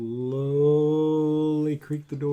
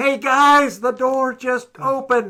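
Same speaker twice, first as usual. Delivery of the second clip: very loud, very high, drawn-out holler; 10 semitones higher, 8 dB louder than usual. Calling out to the group so they can hear, yelling. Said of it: "So I'm yelling".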